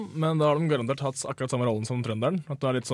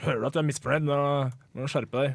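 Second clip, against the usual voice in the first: normal talking voice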